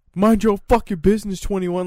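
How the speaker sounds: high-pitched yelling. Retelling what the neighbor yelled at them, imitating the neighbor yelling. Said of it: "he's just yelling my apartment number".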